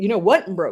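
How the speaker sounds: sarcastic, mocking put-down tone. Quoting what somebody else might say: imitating someone sarcastically. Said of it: "I'm being sarcastic about broken".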